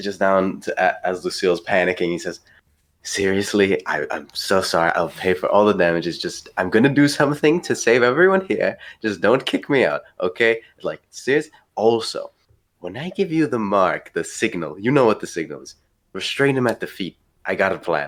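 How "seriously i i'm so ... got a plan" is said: hushed, quiet stage whisper. Playing Ned, crouched under the bar as Lucille panics, half-whispering. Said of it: "Ned whispers just".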